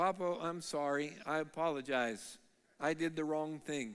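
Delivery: soft, quiet, gentle, kind-hearted voice. Retelling a grandchild's sudden apology after a standoff: imitating a soft, kind apology. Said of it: "in a really kinda soft, kind way".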